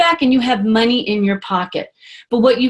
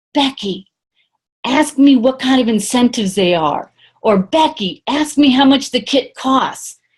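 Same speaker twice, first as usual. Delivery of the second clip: leaning-in stage whisper. Retelling leaning over to an audience member to prompt a question: imitating a stage whisper. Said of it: "I'll lean over to somebody and I'll whisper".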